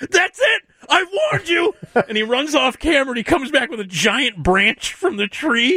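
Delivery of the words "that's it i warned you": mock very high, furious screaming. Retelling a man whose car won't start, imitating him screaming at the car. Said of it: "he's screaming at the car".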